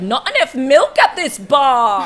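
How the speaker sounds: loud, obnoxious screaming yell. Recalling being obnoxious at a bar to make Olivia laugh: retelling own loud yelling. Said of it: "yelling things like".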